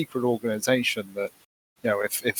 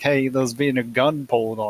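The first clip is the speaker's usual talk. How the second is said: normal talking voice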